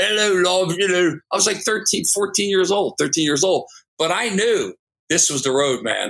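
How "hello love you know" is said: put-on British accent, higher. Recalling being thirteen and wearing Beatle boots, trying a British accent. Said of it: "trying to speak with a British accent".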